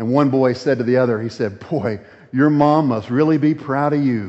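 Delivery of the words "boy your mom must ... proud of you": mocking, sarcastic jab with a fake sweet tone. Retelling what one young man in a movie said to another during a fight, mock-sarcastic. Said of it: "he was being sarcastic".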